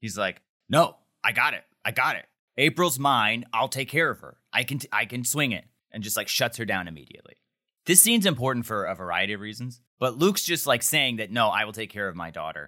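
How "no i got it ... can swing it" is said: mock super defensive tone, slower. Recapping a scene where a dad refuses help paying, acting out super defensiveness. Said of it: "Luke gets super defensive".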